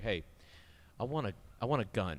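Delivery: deliberate, slow, dragged-out delivery. Retelling a friend's visits to a gun collection, imitating Mitch. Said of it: "So Mitch would come in and be like".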